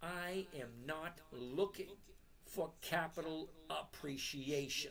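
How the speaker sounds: very slow, deliberate, each word laid out with care. Channel host stressing a point many viewers miss, saying it really slowly. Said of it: "I'm going to say it really slow".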